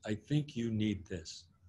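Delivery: put-on heavy Russian accent laid on thick, soft. Retelling what a man told the speaker after tapping his shoulder, thick russian accent. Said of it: "in this thick Russian accent".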